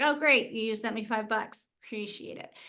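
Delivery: mock-unimpressed, flat, sarcastic put-on delivery. Speaker imitates someone receiving a small gift card; mock-unimpressed gift recipient. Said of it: "they don't feel anything".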